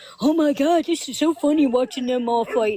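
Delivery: put-on mocking laugh. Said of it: "Laughing and laughing and laughing".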